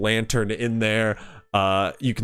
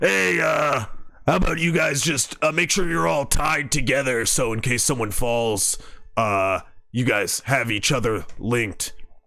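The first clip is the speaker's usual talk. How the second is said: halting, called-out voice; 3 semitones higher than usual. Player voicing Throlin, calling down to the others below: Throlin shouting down. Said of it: "Throlin shouts down".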